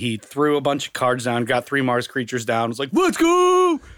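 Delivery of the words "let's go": mock, very high, loud, cocky, pumped whoop. Retelling an opponent's cocky first play, imitating Scott getting pumped. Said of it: "Scott got so pumped".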